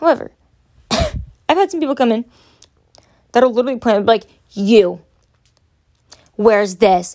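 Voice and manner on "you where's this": put-on aggressive attitude, slower. Retelling a person who came in while the speaker stocked products, mock-aggressive. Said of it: "you are already being real aggressive with me".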